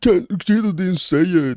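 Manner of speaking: mocking, high, slow, whiny voice.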